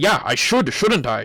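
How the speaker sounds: put-on annoyed, angry tone. Retelling what an Uber driver said about his pay: imitating an angry driver. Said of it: "he's getting angry".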